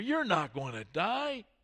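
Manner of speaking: sneer running through it, scornful. Reading the serpent's reply to Eve in the garden story, sneering. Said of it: "again with the sneer".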